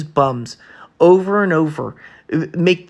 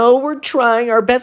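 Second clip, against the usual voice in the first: derisive, sneering, pitched-up voice; 8 semitones higher than usual. Mad at a team that gave up, quote a player's excuse in a mocking Freddie Freeman voice. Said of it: "I don't want to hear Freddie Freeman".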